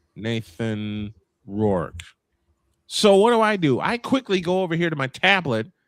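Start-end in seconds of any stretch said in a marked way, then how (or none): 0.2-2.0 very low, hushed, quiet murmuring voice. Recounting the one name he said, low tone. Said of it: "In a low tone, all he said was".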